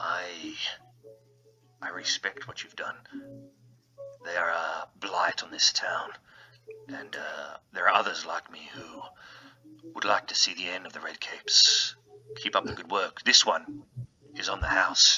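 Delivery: whispered, close-up, slow, hushed murmur. Voicing a bartender who leans in close to the players: speaking really quietly. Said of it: "really quiet".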